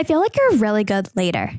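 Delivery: put-on swooping Valley Girl lilt. Quoting what the new store manager said, imitating Paige, Valley Girl voice. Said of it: "it sounds more Valley Girl than I mean it to".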